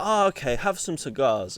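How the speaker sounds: light put-on Chinese accent. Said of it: "I just wanted to do a, an accent of any sort".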